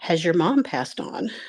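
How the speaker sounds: put-on almost-whisper. Retelling what the lady giving the massage asked: imitating an almost-whisper. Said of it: "kinda almost a whisper".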